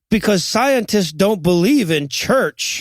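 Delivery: ordinary delivery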